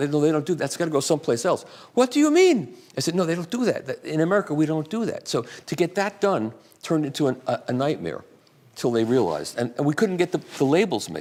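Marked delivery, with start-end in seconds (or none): 1.9-2.7 put-on German accent with very high pitch. Speaker quotes a company representative's reply, in a German accent. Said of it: "I'll do my German accent".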